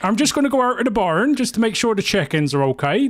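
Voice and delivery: English West Country accent. Comparing two accents, speaker demonstrates: West Country accent. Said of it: "That's the West Country accent".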